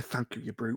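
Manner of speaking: quiet mutter under the breath. Speaking in character to another character, muttered under the breath. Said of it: "under my breath".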